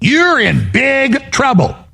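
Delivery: sassy schoolteacher tone, high and swooping. Warning someone that they are in big trouble: like a sassy school teacher. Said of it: "he sounds like a sassy school teacher".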